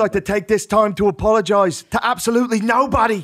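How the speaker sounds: high-pitched voice with Irish accent. Asked by friends to do McGregor, doing a Conor McGregor Irish impression. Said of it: "I could do Irish for a second".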